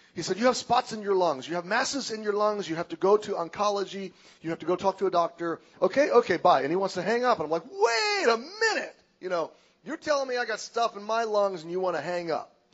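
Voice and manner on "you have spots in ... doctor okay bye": put-on broken Russian accent. Retelling a hurried analyst calling with CAT scan results: imitating broken Russian accent. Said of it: "and he's broken Russian accent".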